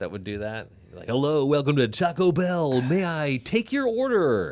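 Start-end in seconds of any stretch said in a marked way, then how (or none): 1.1-4.5 hammed-up, over-the-top, very loud, pitched-up voice. Asking someone who worked at Taco Bell whether they hammed it up, imitating a hammy cashier. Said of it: "Did you ham it up?".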